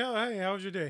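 open-mouthed speech. Speaker imitates how Draymond Green talks to you: Draymond Green, mouth hanging open. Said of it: "talking to you like with his mouth open".

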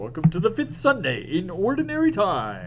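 high, wide-ranging radio announcer voice.

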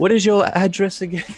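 mock clerk voice, high and laughing.

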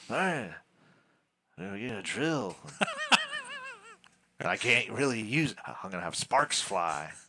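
odd, silly, weird put-on voice with swooping pitch. Speaker recaps the TV show Home Improvement in a weird put-on voice. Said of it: "recapping the show in a weird voice".

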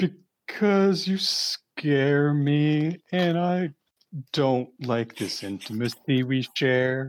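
put-on crying character voice. In a dice game, answering another character, the player cries as Rock. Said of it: "start crying to mimic his crying".

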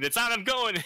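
very high, shrill, loud full-throated scream. Retelling the moment the video finally came up: retelling own scream. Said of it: "and I just screamed".

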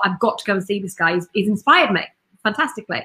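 ordinary delivery

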